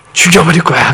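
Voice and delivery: high, loud, threatening, menacing possessed voice.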